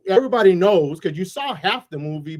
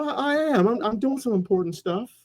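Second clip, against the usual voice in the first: goofy, high-pitched hero character voice; 5 semitones higher, 3 dB quieter than usual. Describing a Superman who got no respect from his friends, goofy high Superman voice. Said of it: "All goofy in a high voice".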